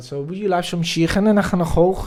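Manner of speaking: very loud, fast Liverpool Scouse accent. Asked by the other speaker to do one, the speaker tries a Scouse accent. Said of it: "Can you do a Scouse accent?".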